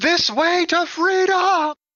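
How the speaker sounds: high, slow, loud rallying shout.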